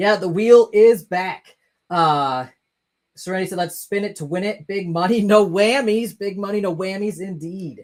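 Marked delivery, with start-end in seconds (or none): none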